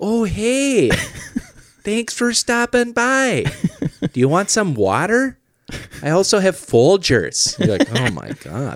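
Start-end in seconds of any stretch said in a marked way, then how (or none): 0.0-7.6 put-on far-north Minnesota accent, pitched way up high. Describing people from far north in Minnesota, imitating one: northern Minnesota accent. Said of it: "the further north you get in Minnesota".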